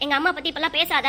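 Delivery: ordinary delivery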